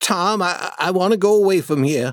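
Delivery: trembling, shaking, high, scared voice. Beside the cross where the money lies, a character answers his companion; shaking voice. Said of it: "Huck said in a shaking voice".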